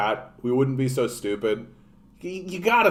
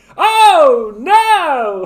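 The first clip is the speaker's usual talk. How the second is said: cheery, happy-go-lucky voice, very high, very loud; 12 dB louder than usual. Showing a voice they rarely use, kept for bad situations: happy-go-lucky guy voice. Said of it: "because he's like".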